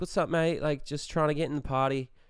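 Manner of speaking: quick, fully committed put-on Australian accent. Retelling bluffing past two frat guys with a friend, in an Australian accent. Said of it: "fully like committed to the Australian accent".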